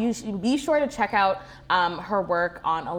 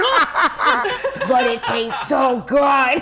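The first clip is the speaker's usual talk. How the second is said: stretched-out, very slow, loud put-on drawl; 6 semitones higher, 7 dB louder than usual. Repeating a line about food, doing a Jordan impression. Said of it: "I almost sounded like him. / That is a good Jordan impression".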